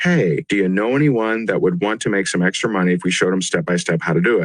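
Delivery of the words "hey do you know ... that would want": usual speaking voice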